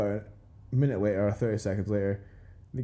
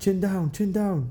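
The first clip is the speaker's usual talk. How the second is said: fake Thai accent, high and drawn out; 10 semitones higher, 4 dB louder than usual. Recalling a friend, Dom, shouting during the fight, in a put-on accent. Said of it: "I don't know why I did that accent".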